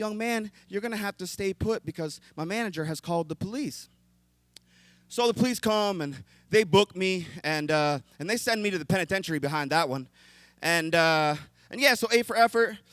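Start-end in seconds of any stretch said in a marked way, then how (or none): 0.0-3.9 sweetest, sugary, honey-sweet polite voice. Retelling what a voice over the shoulder said: imitating the sweetest voice. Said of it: "the sweetest voice comes over my shoulder and says".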